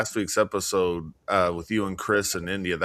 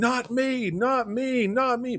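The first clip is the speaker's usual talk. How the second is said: very high, very slow screaming. Retelling a horror movie scene where a woman freaks out: imitating someone screaming. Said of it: "and she's screaming".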